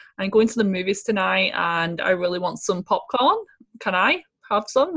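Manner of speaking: ordinary delivery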